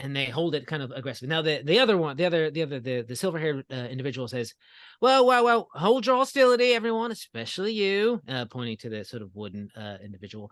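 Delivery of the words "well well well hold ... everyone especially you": odd put-on Cockney accent, shrill and booming. Playing a character calming a tense first meeting, weird Cockney accent. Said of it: "my weird Cockney accent".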